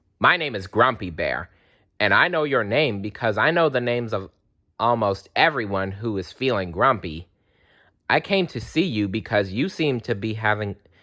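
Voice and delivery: ordinary talk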